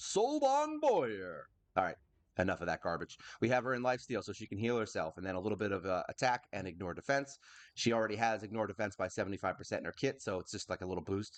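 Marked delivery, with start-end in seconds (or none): 0.0-1.5 very high, sing-song, swooping announcer voice. Introducing the next character on a list: announcer voice. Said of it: "like an announcer".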